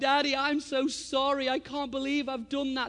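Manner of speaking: put-on sobbing. Retelling reaching for him as he pushed away, the speaker quotes him: acting out his sobbing. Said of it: "he's just sobbing, like".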